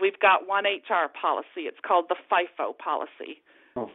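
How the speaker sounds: put-on speaking with a Newfoundland accent. Retelling what he said when HR needed bringing in, Newfoundland accent. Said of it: "in his beautiful Newfoundland accent".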